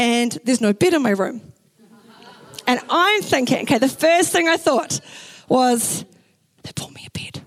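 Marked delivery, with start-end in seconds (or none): 6.6-7.4 hushed, whispered under the breath. Recalling walking into the bedroom, the speaker voices the first thought, whispering. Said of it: "I don't know why I'm whispering".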